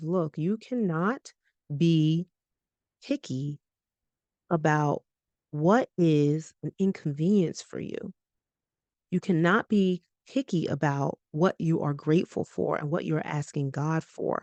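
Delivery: ordinary delivery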